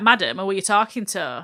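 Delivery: ordinary talk, nothing marked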